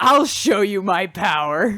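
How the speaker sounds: put-on cocky, boastful tone. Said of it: "cocky about it".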